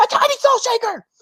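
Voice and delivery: shrill, very high put-on character voice. Acting out her opening a small one from the set, in a very Monica voice. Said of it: "in a very Monica voice".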